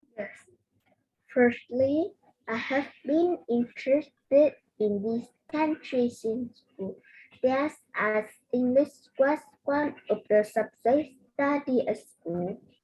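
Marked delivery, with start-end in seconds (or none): 1.3-6.9 very slow, careful reading, every word drawn out. Repeating a sentence after the teacher asks for very slow speech: speaking very slowly. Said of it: "we have to speak very slowly".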